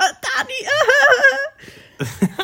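totally bewildered, very high, slow, drawn-out ahs. Telling dani about watching a video, acting out total confusion. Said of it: "und ich so voll verwirrt".

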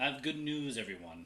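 put-on cartoon old professor voice, announcing. Ending the talk with a catchphrase: Professor Farnsworth voice. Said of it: "I'll be like Professor Farnsworth".

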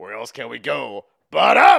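very loud, rough, swooping, belted outburst. Doing an Al Pacino impression from The Irishman: Al Pacino impression. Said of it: "Al Pacino impression".

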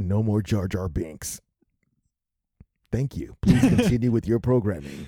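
mock radio broadcast announcer voice. Interrupting a conversation about jar jar binks, a speaker breaks in with radio announcer voice. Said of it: "let [name] do some radio voice".

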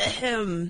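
soft, convincing fake throat-clearing cough. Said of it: "throw some convincing coughs in there".

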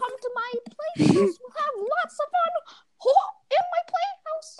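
very high, soft, faintly British voice. Quoting the line Jacob used to say all the time, imitating Jacob. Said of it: "you sound like Salad Fingers".

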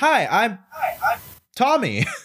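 very high, swooping, chirpy sing-song doll voice. Quoting a favorite movie line, imitating Chucky's delivery. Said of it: "That delivery was so good".

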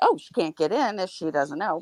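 ordinary talk

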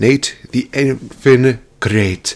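slight touch of a Scottish accent. A wrestling radio host introduces himself, going a little scottish. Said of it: "I went a little Scottish there".

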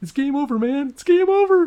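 play-acted, very high, very loud, shrill panicked freakout. Speaker imagining how most people would give up, imitating a soldier: mock-panicking Aliens soldier. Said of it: "that dude from Aliens who was always freaking out".

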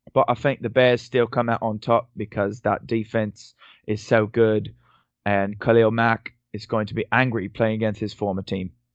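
mock British accent, carried on to the end. Reading a football betting pick aloud, doing the whole read in a mock British accent. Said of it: "I'm just going to do the whole read here with this accent".

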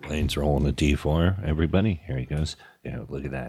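soft, hushed golf commentator voice. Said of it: "Golf, golf commentary".

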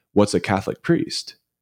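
put-on deadpan, dead serious delivery. Retelling a barista's question to a priest: imitating a dead serious question. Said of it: "looks at him dead serious and says".

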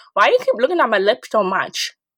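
plain

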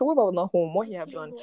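ordinary talk, nothing marked

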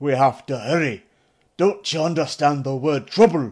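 loud, rasping voice with an irritated, pressing tone. Narrator reads the warder urging someone to hurry, rasping with irritation. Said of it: "His voice rasped with irritation".

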